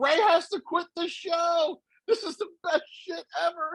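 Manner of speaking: mock gleeful, overjoyed, all-excited thrilled gushing. Retelling a friend's reaction to a prank: imitating Joe excited. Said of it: "Joe was like".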